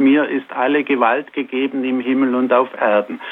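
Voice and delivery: ordinary talk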